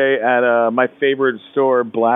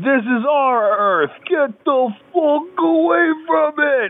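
mock, very high, drawn-out, rising yell. Retelling a line from a bad movie: Kevin Dillon yelling. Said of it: "Kevin Dillon yells".

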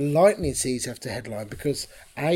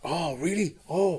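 clumsy, poorly done put-on Welsh accent; 4 semitones higher than usual. Retelling how people reacted to hearing it was a first gig, bad Welsh accent. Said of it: "bad Welsh accent".

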